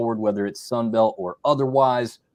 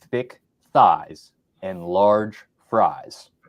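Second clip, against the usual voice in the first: slow, deliberate, clear, each word spaced out; 4 semitones lower than usual. Plugging the name of a food page to the audience, saying it slowly. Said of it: "saying it slow so everyone can hear".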